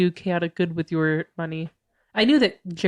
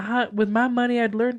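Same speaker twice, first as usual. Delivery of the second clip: high-pitched, put-on southern American accent; 5 semitones higher than usual. Riffing in a playful bit with a co-speaker: southern accent. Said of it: "I'm doing a southern accent".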